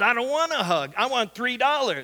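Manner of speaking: rough, gruff, growling retort. You retell how a guy refused Ashley's offer of a hug, imitating a man's growl. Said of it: "The guy growls and says".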